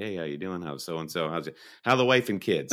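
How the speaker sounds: usual speaking voice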